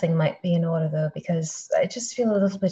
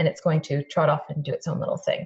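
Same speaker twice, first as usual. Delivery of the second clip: normal talking voice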